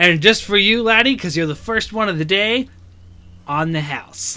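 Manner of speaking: big, stocky barkeeper character voice. The barkeep speaks to the first customer of the day, tavern barkeeper character voice. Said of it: "So the human's a big, stocky guy, overweight, / So the human's a big, stocky guy, overweight, clean-shaven as much as he can be. It's still stubble. He leans heavily on the bar, / So the human's a big".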